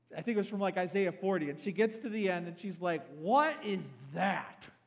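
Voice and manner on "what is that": mock drunk speech in a woman's voice. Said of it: "she is drunk as a skunk".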